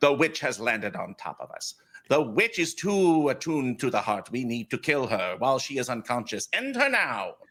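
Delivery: voice of a bee swarm, speaking together. Narrating a scene for Anais and Jezzy, speaking as the bees. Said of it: "the bees say".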